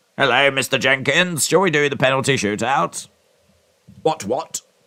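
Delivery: put-on old-timey period character voice. Chatting about penalties first introduced in 1891, doing an impression of 1891. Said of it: "that's my impression of eighteen ninety-one".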